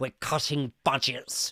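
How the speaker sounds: irritable, angry-sounding voice. Reading viewer messages, imitating Keir Starmer speaking angrily. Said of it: "who speaks like this".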